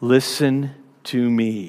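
quiet, stern voice, spoken close in. Imitating an authority figure speaking close to someone's face: imitating a quiet, stern warning. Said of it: "says very quietly but very sternly".

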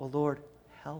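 soft, hushed half-whisper. Voicing a prayer for help in the psalmist's words: half-whispering. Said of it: "I'm just whispering".

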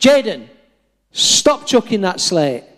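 light, mild, half-done shout. Recalling a lad throwing slate, the speaker replays shouting at him, retelling a shout. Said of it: "at the top of my voice".

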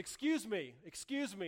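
slow, drawn-out calling out. Telling how a man at the back of the line addressed the airline employee, retelling a shout.

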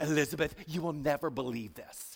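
low, hushed voice, rattled off quickly. Retelling the story, voicing what Mary didn't say to Elizabeth: Mary impression. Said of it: "that's my best Mary impression".

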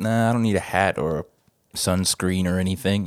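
ordinary talk

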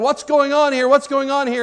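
high crowd screaming, yelling and shouting. Acting out a crowd in an imagined scene: screaming and yelling. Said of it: "they're screaming and yelling".

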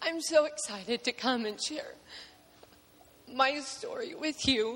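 crying while talking. Greeting the congregation before sharing a forgiveness story: crying while talking. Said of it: "I am crying already".

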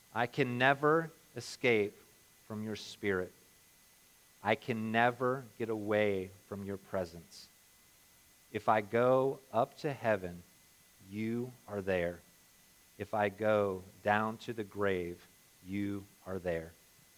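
very slow, unhurried, every phrase drawn out. Leading a prayer from verse seven again, letting it sink in, very slow. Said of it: "We're going to say it even slower".

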